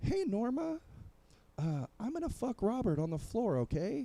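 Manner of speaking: mock voice, very high, swinging widely in pitch.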